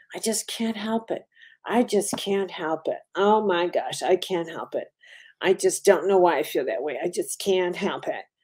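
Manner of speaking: mock whiny, helpless, powerless pleading. Mocking people who claim they can't resist their darkness: imitating helpless people. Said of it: "present themselves as helpless before their darkness".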